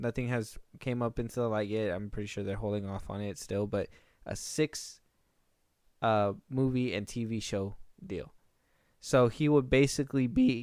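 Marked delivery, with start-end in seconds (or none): 9.0-10.6 voice cracking, slower. Mid-explanation to listeners, the speaker's voice cracks. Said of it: "oh, my voice cracked".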